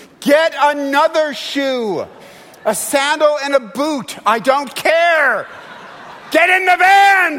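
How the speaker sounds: shrill, very high, loud, very slow hollering. Parent retells yelling out the window at their kids, retelling a yell. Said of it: "I'm yelling".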